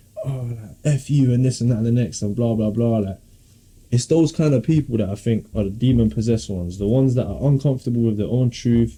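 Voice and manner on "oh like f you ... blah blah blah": plain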